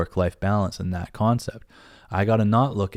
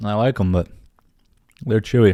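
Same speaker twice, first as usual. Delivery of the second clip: speaking while chewing, mouth full; 4 dB louder than usual. A podcast host chewing Skittles on the show, talking while chewing. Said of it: "Let me chew this damn Skittle".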